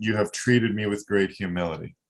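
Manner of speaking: ordinary talk, nothing marked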